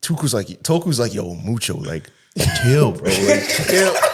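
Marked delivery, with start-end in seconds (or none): 1.1-3.9 deep, low, calm, casual bro-style voice. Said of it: "Toku's voice is deep".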